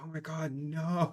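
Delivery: slow, drawn-out dismay. Picturing an Aurora player forced to put blues in the deck: imitating a dismayed Aurora player. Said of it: "Like, just, like".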